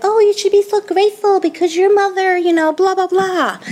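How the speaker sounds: put-on woman's voice, very high, pitched way up. Retelling what a woman kept saying about the speaker's mother, imitating her voice. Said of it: "but I always imitate, imitate her this way".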